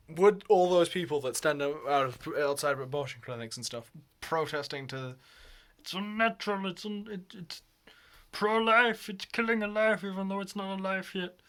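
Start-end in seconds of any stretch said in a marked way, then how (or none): 5.8-11.3 high-pitched, put-on dumb idiot voice. Mocking abortion-clinic protesters in a video, say it in a dumb idiot voice. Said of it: "I'm doing that voice a lot".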